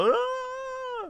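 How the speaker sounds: very high mock moan.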